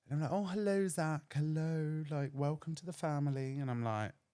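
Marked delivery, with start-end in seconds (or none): 0.3-3.6 put-on high, laid-on upper-class posh accent. Retelling how a posh older couple welcomed zach into their house, imitating a posh voice. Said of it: "So it was very posh".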